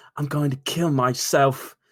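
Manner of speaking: poor, unconvincing put-on Australian accent. Quoting a bullied Australian kid from a video, in a bad Australian accent. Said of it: "That's not a good Australian accent".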